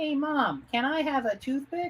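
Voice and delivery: put-on squeaky, very high, funny little kid voice. Recalling a comic-strip videotape, voicing its little kid, funny little kid voice. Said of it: "so it was these weird voices".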